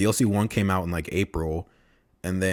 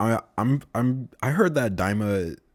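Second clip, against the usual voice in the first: stuttering over first words, pitched up; 3 semitones higher than usual. Speaker discussing new content for the game, stuttering. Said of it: "sorry for the stuttering".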